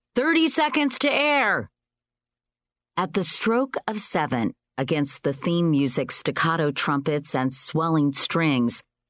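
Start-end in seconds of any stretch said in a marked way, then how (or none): 0.2-1.7 booming, very high-pitched, carrying call. Narrator reading, the stage manager calling the countdown to air: booming.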